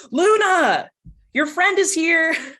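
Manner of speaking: loud, high-pitched yell with one word drawn long. Recounting her turning from the door to call into the house; retelling a yell into the house. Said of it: "turns around and yells".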